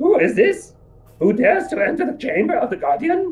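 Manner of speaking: weird gurgly creature voice, very high and swooping. Voicing a figure who challenges intruders in a chamber, weird bubbling voice. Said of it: "starts speaking in this weird voice that kind of bubbles a bit".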